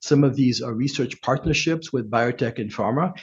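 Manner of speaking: ordinary delivery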